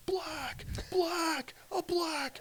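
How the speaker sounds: mock screams, very high and very slow. Retelling a film scene where the neighborhood chases someone: imitating screaming. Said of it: "they start screaming".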